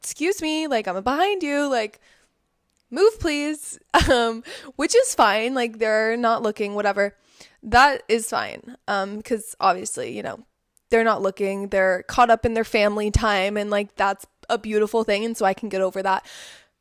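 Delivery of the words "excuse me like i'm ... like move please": polite high calling voice. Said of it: "So you kinda have to be like".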